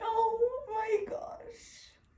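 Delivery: tearful whimper, very high and very soft. Reacting with a partner to finding out about a pregnancy: crying. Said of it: "why are you crying?".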